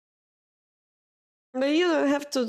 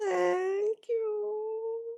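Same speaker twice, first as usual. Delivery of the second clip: high, soft, choked-up teary voice. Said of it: "I don't want to cry".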